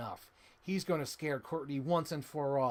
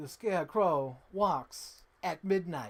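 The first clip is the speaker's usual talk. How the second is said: slow, drawn-out actor's voice, each word stressed; 3 semitones higher, 4 dB louder than usual. Quoting a video game character's line: Christopher Walken voice. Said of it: "a Christopher Walken voice".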